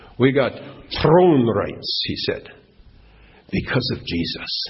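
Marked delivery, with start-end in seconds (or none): 0.2-2.1 put-on Scandinavian accent with rolled r. Retelling an old fellow's words at a testimony meeting, Scandinavian accent with trilled R. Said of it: "There it came through".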